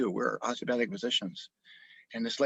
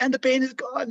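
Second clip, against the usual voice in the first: high, near-tearful voice, on the edge of crying. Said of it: "she was really literally near crying".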